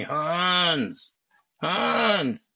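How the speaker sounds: mock, whiny, high, drawn-out screeching call. Describing a scene where he comes into the vault, retelling a screech. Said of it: "It's like he's like screeching".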